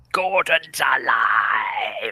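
the word "alive" drawn out long. Taking up an invitation to do the king's voice: Brian Blessed voice. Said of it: "King Uther is played by Brian Blessed".

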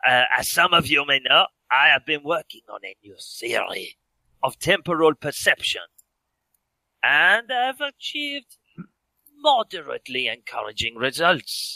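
outrageous exaggerated put-on French accent. Retelling a man addressing an audience, outrageous french accent. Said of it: "he had an outrageous French accent".

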